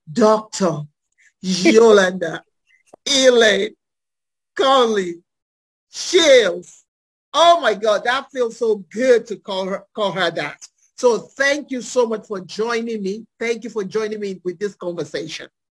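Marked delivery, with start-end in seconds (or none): 0.1-6.8 loud, very slow, halting, deliberate delivery. Host introduces her guest by full name: very slow. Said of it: "I'm going to say very slowly".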